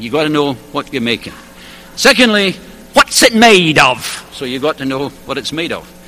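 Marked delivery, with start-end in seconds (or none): 2.9-4.3 deliberate, very slow put-on English accent. Speaker quoting an Englishman's second question, trying an English accent. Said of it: "so I'll try his accent".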